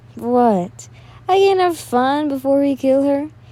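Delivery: jeering, derisive, taunting tone. Narrating an attacker's reply to his accomplice, in a mocking tone. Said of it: "he asked with a mocking tone".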